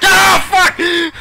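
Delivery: all-out, very loud, high shriek. Getting startled by a trap while playing: screaming as loud as possible. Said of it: "I really didn't mean to scream that, but I screamed it as loud as I could".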